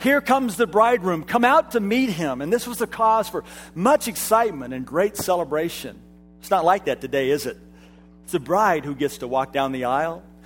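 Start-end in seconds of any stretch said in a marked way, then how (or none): 0.0-2.4 booming herald-style voice, loud and pitched up. Explaining old wedding customs, acting out the bridegroom's friend's announcement: mock loud announcement. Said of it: "announce in a really loud voice".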